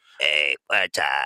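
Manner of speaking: mock electrolarynx voice. Imitating how another speaker's bad Bluetooth sounded: imitating a voice-box voice. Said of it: "You sound like some dude with a voice box".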